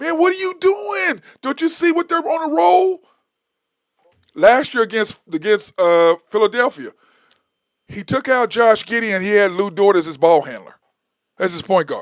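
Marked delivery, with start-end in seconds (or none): 0.0-3.0 acted-out very high, shrill screaming. Retelling sitting and watching a game: imitating own past screaming. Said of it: "we're sitting there screaming".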